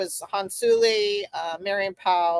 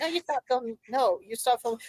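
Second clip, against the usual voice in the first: put-on yell, higher; 5 semitones higher, 3 dB quieter than usual. Retelling how a woman lost it at a filmmaker: imitating someone yelling. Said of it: "why are you yelling at me?".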